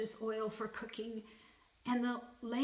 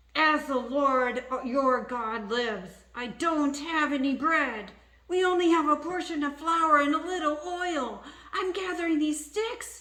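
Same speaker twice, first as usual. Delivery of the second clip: very loud, high voice through gritted teeth; 5 semitones higher, 10 dB louder than usual. Reading a story, a woman answers a man who asks her for bread, through gritted teeth. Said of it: "with gritted teeth she said".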